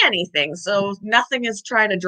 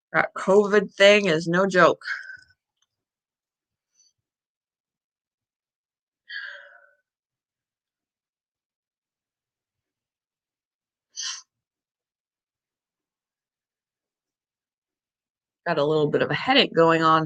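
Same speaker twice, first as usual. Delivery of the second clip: short of breath, lower pitch; 4 semitones lower than usual. Talking to viewers while recovering from covid, out of breath. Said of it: "If I sound like I'm out of breath, I am".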